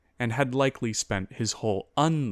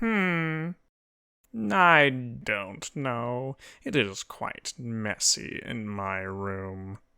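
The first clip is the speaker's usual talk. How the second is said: pompous, self-important, haughty nasal voice. A ghost, asked for help, answers in a pompous, nasally voice. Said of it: "said a pompous, nasally voice. / said a pompous, nasally voice. "We search for bones of [name]. You happen to know where they are?" "I did see a giggling imp run about with them, but no." "You know ho".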